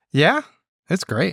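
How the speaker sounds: great lilted up with a rising question tune. Answering whether you love it down there: said like a question. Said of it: "Why'd you say it like a question?".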